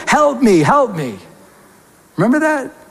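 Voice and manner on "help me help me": put-on male yelling voice. Retelling how a man upstairs yelled for help: imitating a man yelling. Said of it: "this man was yelling".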